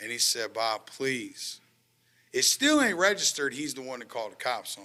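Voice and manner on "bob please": put-on tearful, crying voice. Retelling a dad's words during an arrest: imitating a crying dad. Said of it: "He's crying".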